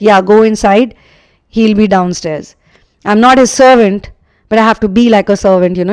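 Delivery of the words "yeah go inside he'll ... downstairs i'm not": usual speaking voice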